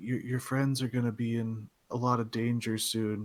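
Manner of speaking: put-on quiet whispering girl. Voicing a tabaxi girl warning a player: whispering tabaxi girl. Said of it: "whispers in your ear".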